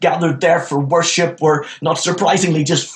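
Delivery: ordinary delivery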